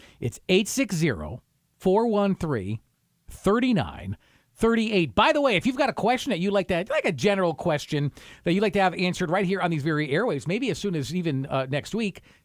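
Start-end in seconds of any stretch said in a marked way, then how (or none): 0.2-5.1 slightly slower, careful and deliberate delivery. Repeating a phone number on a radio show so listeners can write it down, slowed down a little. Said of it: "I'll slow it down a little bit here".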